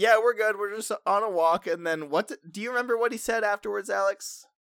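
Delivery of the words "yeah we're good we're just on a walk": play-acted, loud yelling. Retelling calling back to a stranger ahead on the road: imitating own past yell. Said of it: "we just yell up".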